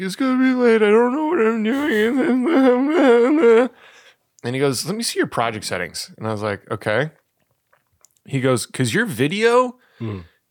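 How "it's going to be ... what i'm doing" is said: put-on near-crying voice, very high and slow. Retelling going to the video chairperson about a late project, retelling being almost in tears. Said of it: "almost in tears".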